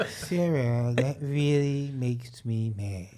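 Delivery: dead level and stretched. Doing an impression after being asked: Droopy Dog voice. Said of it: "That's pretty good".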